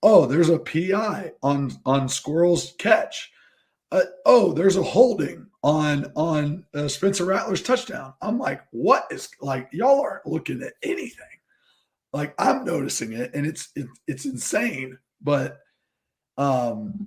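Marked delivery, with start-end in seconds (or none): 8.2-15.0 raspy, hoarse, worn-out voice, nearly gone. Complaining about missed penalty calls after yelling at them; hoarse, losing voice. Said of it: "you don't have your voice right now".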